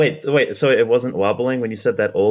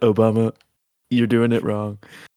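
put-on mocking voice. Acting out Trump telling Obama off: imitating Trump. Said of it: "He said".

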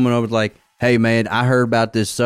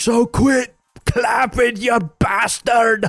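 put-on high, slow Scottish accent; 12 semitones higher than usual. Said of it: "I think the guy was Scottish".

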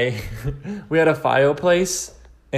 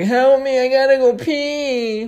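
put-on very high, very slow, drawn-out overdramatic child voice; 11 semitones higher, 4 dB louder than usual. Speaker mocks their younger self crawling around the floor, mocking own super-young voice. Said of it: "I'm mocking myself as if I was like super, super young".

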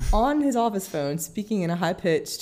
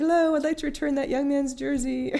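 squeaky, high-pitched put-on voice; 9 semitones higher than usual. Recapping a scene, a character calls the station, high-pitched voice. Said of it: "speaks in that same high-pitched voice".

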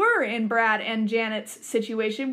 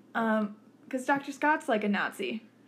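usual speaking voice

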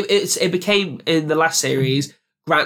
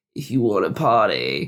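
slow, drawn-out vocal fry; 6 semitones lower than usual. Retelling a character's line on stage: Maddie's vocal fry voice. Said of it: "she gives vocal fry".

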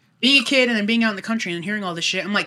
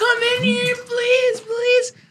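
mock very high, drawn-out, desperate panicked scream. Retelling calling down the hall to her parents at night as a kid: retelling a panicked scream. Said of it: "I was screaming".

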